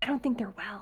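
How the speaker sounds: very soft hushed remark. A woman who can't let a person in speaks up: lowered voice. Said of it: "she kind of like lowers her voice".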